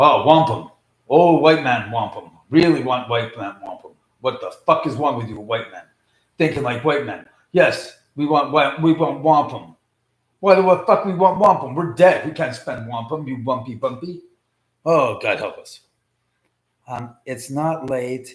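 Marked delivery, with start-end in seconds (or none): 0.0-14.2 deep, booming ghost voice.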